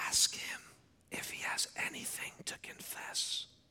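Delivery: slow, breathy whispered aside. Retelling what the group leader said during prayer: imitating a whisper. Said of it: "he whispers in the middle of prayer".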